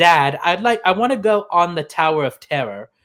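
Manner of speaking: clumsy, bad put-on British accent. Retelling what a boy from the UK said: bad British accent. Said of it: "my accent is probably gonna be very bad".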